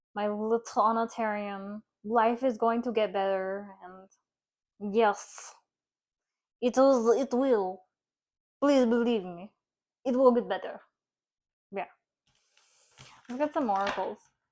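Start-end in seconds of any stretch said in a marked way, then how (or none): 0.2-10.8 slight put-on Russian accent, louder and slower. Comforting someone called little anatarian, in a little russian accent. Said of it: "my little Russian accent or my Eastern European accent".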